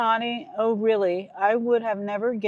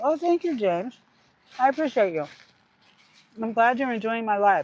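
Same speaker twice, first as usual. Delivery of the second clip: talking through a mouthful. Thanking a viewer during a live, talking with a mouthful. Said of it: "I have a mouthful".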